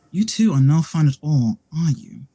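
gentle, soothing, effeminate, almost calming voice. Narrating a scene, voicing a woman who approaches two characters: soft, effeminate, calming voice. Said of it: "this voice is effeminate, soft, almost calming".

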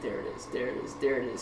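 speaking as if holding the breath.

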